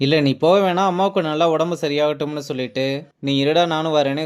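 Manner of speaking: ordinary delivery, nothing marked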